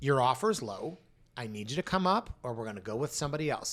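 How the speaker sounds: ordinary delivery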